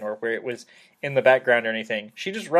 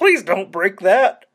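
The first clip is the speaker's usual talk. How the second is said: nervous, pleading voice, high-pitched and loud; 8 semitones higher, 7 dB louder than usual. Retelling a film scene, imitating nervous Bobcat Goldthwait. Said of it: "bounces back and forth just between being goofy and being really nervous".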